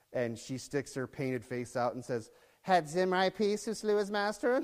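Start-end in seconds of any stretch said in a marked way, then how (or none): 2.6-4.6 high, sassy, taunting tone. Retelling a story, voicing the woman at the palace window: mock-sassy. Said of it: "Being all sassy".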